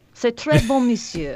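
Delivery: put-on playful French accent on French phrases.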